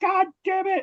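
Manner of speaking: high-pitched scream. Retelling a manager screaming after prank calls: imitating someone screaming. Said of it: "he's just screaming from the one dressing room".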